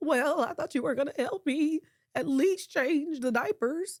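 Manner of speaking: trembling, wavering tone. Retelling what Shanice says when upset; imitating Shanice's shaky voice. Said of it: "that voice was shaking".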